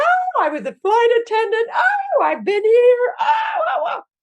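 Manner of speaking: very high, gushing, swooping, excited sing-song delight. Retelling a tandem jump on her birthday, the speaker imitates their excited mother. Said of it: "my mother is like".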